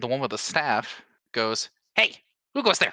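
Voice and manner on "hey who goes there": very high, loud shouted voice. Voicing a kobold with a staff calling out: sounds like Beavis. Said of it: "Why do they sound like fucking Beavis?".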